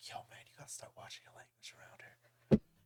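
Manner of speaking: very quiet, breathy, barely voiced whisper. Retelling what a business partner said around the corner: imitating someone whispering. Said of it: "He starts whispering".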